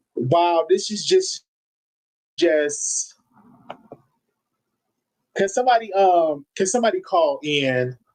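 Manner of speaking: very low, choked-up voice near tears. Speaker upset over a man being shot and killed, asking someone to call in: emotional, near tears. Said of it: "I don't know why I'm emotional".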